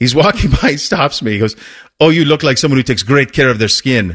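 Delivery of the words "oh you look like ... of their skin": loose, inexact attempt at a Swedish accent. Recounting a man who stopped the speaker in passing, attempted Swedish accent. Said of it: "that's not exactly a Swedish accent".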